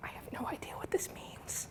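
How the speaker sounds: soft, barely voiced whisper. Speaker presenting the contrast formula admits not understanding it, whispered.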